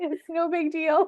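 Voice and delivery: high, loud, breezy, sarcastic mock innocence.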